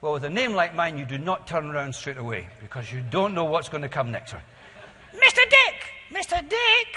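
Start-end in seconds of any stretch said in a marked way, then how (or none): 5.1-7.0 tiny, piping, very high, slow little voice. Act out someone calling you out of nowhere while you work with other people, imitating someone's little voice. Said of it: "your little voice".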